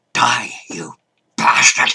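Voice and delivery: low, hissing stage whisper. Taking a cackling foe down onto the stage, the narrator hisses: hissed stage whisper. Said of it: "I hissed in a stage whisper".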